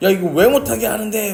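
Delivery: high, loud angry outburst. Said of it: "막 이러고 화를 내는 거죠".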